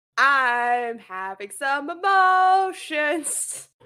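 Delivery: slow, loud, mock-emotional overwrought wail.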